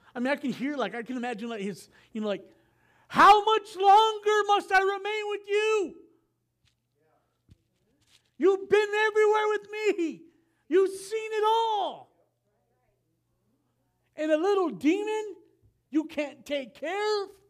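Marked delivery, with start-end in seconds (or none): 3.0-17.2 put-on frustration, higher and louder. A preacher imagines Jesus rebuking a faithless people, imagined Jesus, mock-frustrated. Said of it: "What was he frustrated about?".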